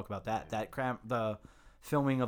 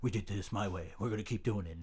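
put-on crusty old rich man voice; 2 semitones lower than usual. Imitating the Architect from the film as an old fat cat man. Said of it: "an old, uh, man is like, s-, fat cat, like".

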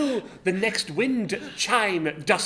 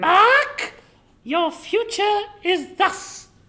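very high, loud put-on witch voice; 11 semitones higher, 6 dB louder than usual. Told to do a witch's voice, a player tells a friend's fortune: witch's voice. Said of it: "You've got to do a witch's voice".

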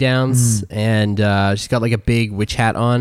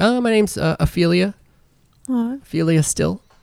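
put-on nervous young wizard voice, much higher pitch; 9 semitones higher than usual. A game master voicing a nervous young wizard introducing herself: nervous Ophelia Still voice. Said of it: "So the nervous young wizard, she's like".

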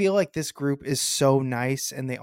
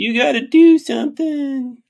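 put-on annoying kid voice, higher and louder; 12 semitones higher, 11 dB louder than usual. Quoting a favourite movie line as the character: Melvin voice. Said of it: "Your impression".

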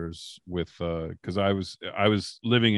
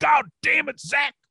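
put-on scream, higher and louder; 5 dB louder than usual. Retelling how a boss screamed after a crown came loose: imitating someone screaming. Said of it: "he starts screaming".

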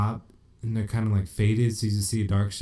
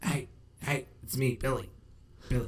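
put-on cartoon teen voice, much quieter; 4 semitones higher, 9 dB quieter than usual. Retelling a scene where a man calls to her from behind the door, Beavis-like voice. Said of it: "Sounds like fucking Beavis".

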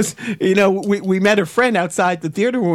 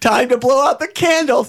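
put-on unfazed little guy voice, higher; 5 semitones higher than usual. Retelling a little guy's line after a car crash, imitating an unfazed little guy. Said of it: "He's like completely unfazed by this".

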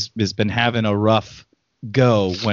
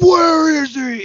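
very high, all-out acted scream; 4 dB louder than usual. Acting out the Batman Begins scene with the guy hanging upside down, do a screaming Batman voice.

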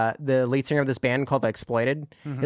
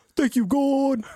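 very high put-on Spanish accent, preacher- and gangster-style; 12 semitones higher than usual. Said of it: "What is that voice that you're doing?".

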